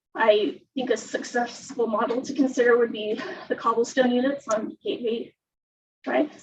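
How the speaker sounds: trembling with nerves, shaky voice. Speaker commenting on a housing parcel, nervous, with a shaking voice. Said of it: "Voice is shaking".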